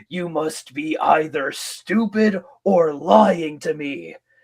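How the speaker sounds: slow, deliberate villain voice, each word stressed. Retelling a classic Transformers moment, imitating Megatron. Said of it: "Megatron just says to him".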